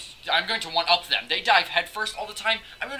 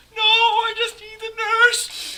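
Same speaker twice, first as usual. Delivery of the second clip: very high, loud, put-on tear-choked voice; 6 dB louder than usual. Recounting breaking his leg as a kid, replaying his past self: holding back tears. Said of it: "trying to hold back these tears".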